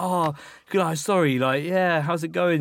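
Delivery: play-acted, forced, overly nice, trying too hard, drawn-out. Retelling apologising to someone later that night: imitating being extra nice. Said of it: "trying to be nice".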